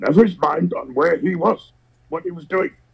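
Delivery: high-pitched puppet character voice. Quoting a film character in praise of the actor: Yoda voice. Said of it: "that was a hell of a Yoda voice you did there".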